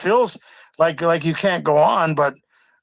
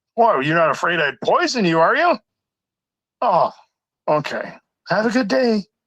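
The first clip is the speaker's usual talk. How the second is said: faux-polite sarcasm, lightly done. Speaker acts out how harassers taunt a target: acting out sarcastic taunting. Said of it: "a tiny little bit of sarcasm".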